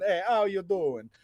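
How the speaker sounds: very high, loud, fake put-on Italian accent. Host doing the show intro his co-host suggested, in a fake italian accent. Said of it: "turning into more of an Italian".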